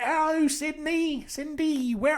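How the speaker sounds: put-on slow, high, vague accent of unknown origin. Acting out a visitor looking around the house: imitating Agnes in an unplaced accent. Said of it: "I don't know what accent that is".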